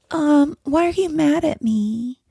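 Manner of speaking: put-on very high, slow, childish baby voice. Demonstrating how a grown woman sounds doing a baby voice. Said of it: "if you talk like this, let me demonstrate".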